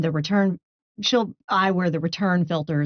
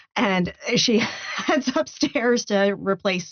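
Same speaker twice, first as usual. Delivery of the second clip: ordinary talk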